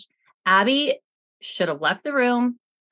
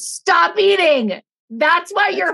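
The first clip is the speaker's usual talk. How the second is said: mock enraged, high, loud scream at full fury; 9 semitones higher, 6 dB louder than usual. Retelling a reality show fight line someone screamed: imitating someone screaming. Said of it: "And you scream the words".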